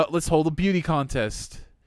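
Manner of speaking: usual speaking voice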